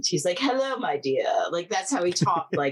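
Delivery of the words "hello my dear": put-on high, heavily affected old-Hollywood accent. Retelling how a man greeted them at the door, in an affected old-hollywood accent. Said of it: "he has this very affected accent".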